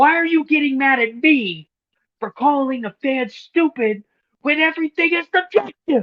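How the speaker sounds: mad, angry rant, very high and very loud. Imitating J D getting mad at Tony Khan. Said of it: "I love when he gets mad".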